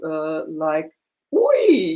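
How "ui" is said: high, loud, startled ui. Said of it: "they are all kind of exclamations".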